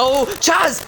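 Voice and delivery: high, loud, excited commentary-style outburst.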